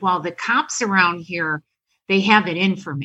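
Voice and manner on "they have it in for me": ordinary talk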